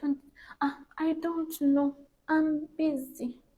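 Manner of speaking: sweet, sugary, very high, drawn-out tone. Imitating people who talk sweetly but never help: nice sweet soft tone. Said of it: "talk nice and sweet and soft".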